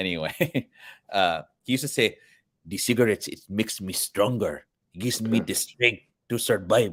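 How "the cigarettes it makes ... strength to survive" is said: put-on Filipino-accented English. Speaker quotes what a chain-smoking grandparent used to say; Filipino accent. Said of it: "That's my Filipino accent for everybody".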